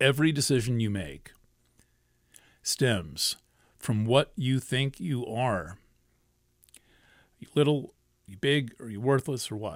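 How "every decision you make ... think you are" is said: very slow, deliberate, word-by-word pace. Speaker repeats a quote so listeners can write it down, said slowly. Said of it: "I'll say it slowly".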